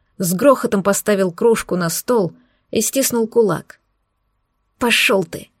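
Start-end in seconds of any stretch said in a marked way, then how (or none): 4.8-5.4 hissed through clenched teeth. Narrator, as the woman, answers the man who slammed his mug down, hissed through teeth. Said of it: "прошипела я сквозь зубы".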